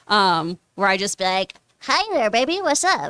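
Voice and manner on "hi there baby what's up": put-on high, childish little-kid voice. Retelling saying inappropriate things to him, kid voice. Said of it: "my kid voice".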